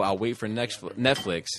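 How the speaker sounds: plain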